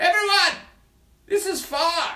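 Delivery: very high, loud yell shouted across a distance. Showing near and far, the speaker plays a figure on the far side, yelling as if far away. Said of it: "I changed my voice a bit".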